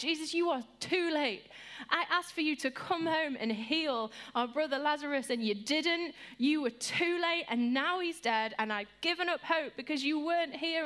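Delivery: acted, tearful, exasperated, frustrated crying. Retelling Mary speaking to Jesus: imitating frustrated crying. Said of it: "when Mary was crying in frustration to God".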